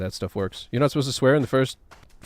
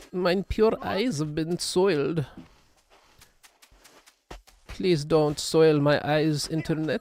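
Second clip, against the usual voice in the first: bad put-on German accent. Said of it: "That's not a good German".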